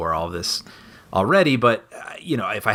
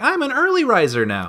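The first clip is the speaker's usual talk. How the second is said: very high, sing-song, swooping cartoon character voice; 13 semitones higher than usual. Describing waking an hour earlier this morning: Ralph Wiggum voice. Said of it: "Ralph Wiggum voice".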